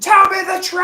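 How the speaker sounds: high, loud, screamed outburst. Answering chat about today, retelling own screaming: retelling own screaming. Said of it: "I was just screaming".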